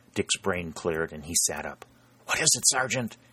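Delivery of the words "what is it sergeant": hushed half-whisper, under the breath. Dick sits up and asks the sergeant what is happening: half-whispered. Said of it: "he whispered".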